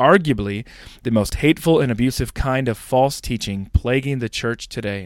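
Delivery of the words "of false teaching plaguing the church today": ordinary talk, nothing marked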